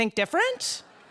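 rising pitch on the word different. Saying a computer company slogan: rising pitch at end of different. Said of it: "you're gonna go up on the end like that".

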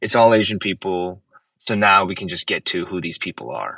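ordinary delivery

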